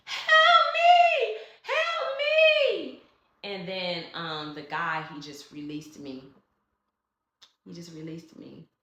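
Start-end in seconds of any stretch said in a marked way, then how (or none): 0.1-3.0 very loud, very high, slow shrieking screams. Retelling a moment of being held and hearing a voice: retelling own screaming for help. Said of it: "And I just started screaming".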